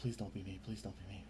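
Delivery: low, very quiet muttering. Voicing a frightened halfling muttering to himself: muttering to himself. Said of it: "you hear him kinda mutter to himself".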